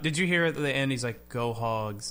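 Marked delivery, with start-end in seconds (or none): 1.3-2.1 lifeless, flat, dead monotone, read-off-a-script sound. Imitating how he said it at the end, in a flat monotone. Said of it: "In the most monotone".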